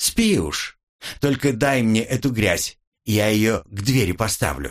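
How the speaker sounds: ordinary delivery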